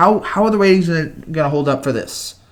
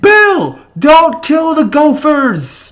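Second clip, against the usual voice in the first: high, loud, slow, excited screaming. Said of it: "Everyone was screaming to Bill Murray".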